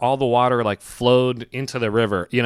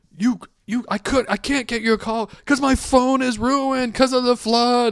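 mock yelling, pitched much higher; 12 semitones higher than usual. Retelling the downstairs neighbor yelling at the landlord, imitating someone yelling. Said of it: "my downstairs neighbor is yelling at my landlord".

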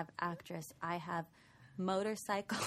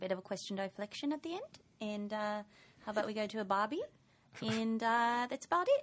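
casual attempt at Australian accent; 2 semitones higher than usual. Asked by a co-host for a little Australian, the speaker obliges in an Australian accent. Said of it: "Can you give us a little Australian".

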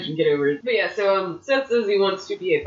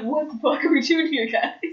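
put-on shocked voice, higher pitch; 8 semitones higher than usual. Retelling a wrestler's reaction to a surprise shirt: imitating Finn Balor shocked. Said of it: "but he was shocked".

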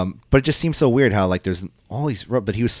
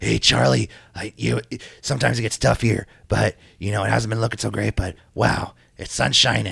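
put-on raspy voice. Retelling a backstage interview, imitating Bobby Roode's raspy voice. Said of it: "He was very raspy last night".

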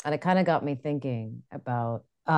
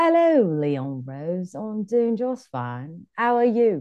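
put-on drunk-sounding posh English accent; 5 semitones higher than usual. Answering a greeting, in a drunk Mary Poppins voice. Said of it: "Is that your drunk Mary Poppins?".

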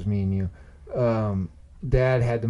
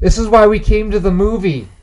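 very loud, shrill, high-pitched booming outburst; 11 semitones higher, 12 dB louder than usual. Telling how a friend spoke up in a quiet movie theater: retelling Jeremy's loud outburst. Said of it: "really loud".

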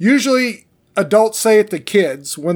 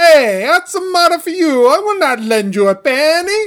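put-on old-movie Italian accent; 10 semitones higher, 3 dB louder than usual. Performing Shakespeare parts as Italian immigrants in a stereotypical 1930s movie. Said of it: "like we were Italian immigrants in a stereotypical 1930s movie".

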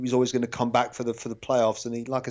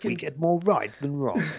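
slick commercial advertising announcer voice; 4 semitones higher than usual. Wrapping up a point before being asked about it, in an advertising voice. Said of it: "What voice was that? Are you doing a commercial or something?".

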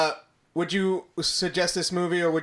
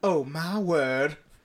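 put-on soft Southern belle accent; 3 semitones lower, 5 dB quieter than usual. Showing the others what a Southern belle voice means: Southern belle accent. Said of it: "Southern Belle would be like".

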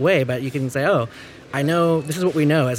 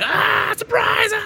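mock surprised scream, very high and raspy. Describing thirty friends screaming at you, the speaker acts it out: retelling a surprise scream. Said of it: "30 people scream at you like".

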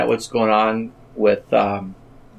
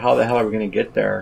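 plain

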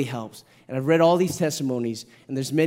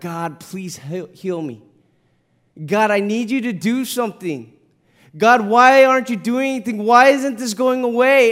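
acted-out crying, tearful, pleading, begging through tears; 7 semitones higher, 7 dB louder than usual. A parent recalling hearing his child beg God to heal him, imitating Evan's tearful begging. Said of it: "through his tears begging God".

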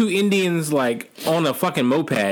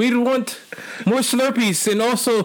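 bad, high fake Indian accent drifting into Mexican; 8 semitones higher than usual. Joking with friends about India, the speaker puts on an accent; bad Indian accent. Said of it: "sounds like you're Mexican".

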